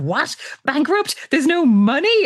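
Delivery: very high, explosive, stunned, shocked outburst. Retelling relatives' reaction to news of bankruptcy: imitating an explosive outburst. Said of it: "Peggy and Mark absolutely explode".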